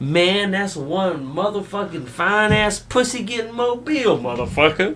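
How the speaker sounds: thick, high-pitched New Jersey gangster accent.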